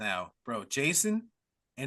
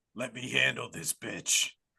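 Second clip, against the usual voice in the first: gravelly, creaky horror-villain voice; 3 semitones lower than usual. Retelling a movie scene where a possessed teen speaks: Freddy voice. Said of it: "he says in Freddy's voice".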